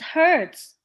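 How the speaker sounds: emphasis placed on the word "hurts". Teaching sentence stress, demonstrating the phrase with stress on 'hurts'. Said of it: "you put the stress on the word hurts".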